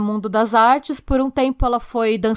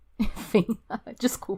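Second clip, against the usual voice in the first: breathy words whispered through nervous laughter; 9 dB quieter than usual. Apologizing after sharing an outrageous money figure: nervous laughter while talking. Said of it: "Eu tô rindo de nervoso".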